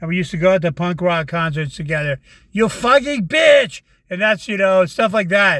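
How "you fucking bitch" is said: put-on thick, heavy German accent, pitched up. Imitating a girlfriend from Germany cussing: heavy German accent. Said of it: "all in a heavy, heavy German accent".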